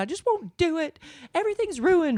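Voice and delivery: put-on very high, exasperated, huffy outburst. Retelling a daughter who puts everything down: imitating a daughter in a huff. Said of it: "in a huff".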